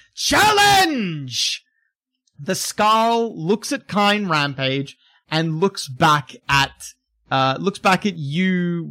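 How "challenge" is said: very high, full-throated screamed call. Voicing a brute barreling into a fight who screams the word: screaming. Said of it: "he screams the word".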